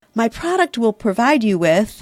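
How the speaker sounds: ordinary delivery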